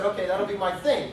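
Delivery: ordinary delivery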